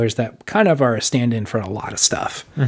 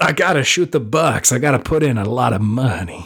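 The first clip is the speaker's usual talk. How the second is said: botched, failed put-on Italian mobster accent. Joking about crime bosses feeding money into Big Buck Hunter: attempted Italian accent. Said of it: "What there accent arm am I doing?".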